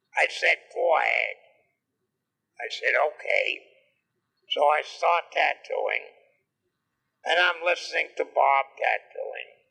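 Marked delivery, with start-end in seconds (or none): 0.2-1.4 coarse, rough, gruff voice. Retelling how Bob Shaw answered before they both started tattooing, in Bob Shaw's rough voice. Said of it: "he says in a rough voice".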